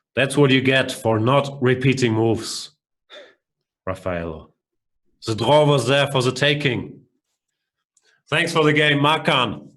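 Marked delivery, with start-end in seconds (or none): 0.2-7.1 fake, put-on German accent. After winning a chess game, addressing the opponent: fake German accent. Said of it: "Sorry for the fake German accent".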